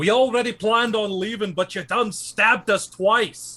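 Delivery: high, loud shout calling from afar. A player's character calls out to a little voice behind a tree, shouting. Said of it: "I guess I'll just shout out to it".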